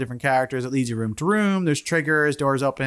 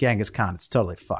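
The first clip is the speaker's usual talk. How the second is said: ordinary delivery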